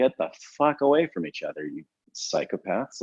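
ordinary talk

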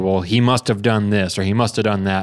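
ordinary delivery

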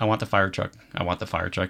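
ordinary talk

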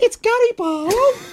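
very high, starstruck, amazed squeal. Retelling what they exclaimed to a companion, in an amazed high-pitched cry. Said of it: "I couldn't reach how high my voice went".

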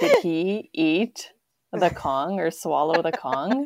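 loud, alarmed, panicking, swooping pitch. Retelling finding the dog's toy missing: imitating own panicked voice. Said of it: "I was, like, panicking".

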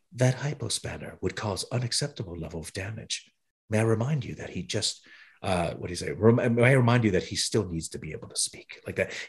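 put-on gentle delivery. Retelling what someone said coming up behind him, imitating a gentle delivery. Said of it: "He says it so gently".

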